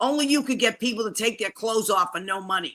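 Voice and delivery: put-on Boston accent. Quoting what the speaker's sister says to them, imitating a Boston accent. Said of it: "my sister says to me in her Boston accent".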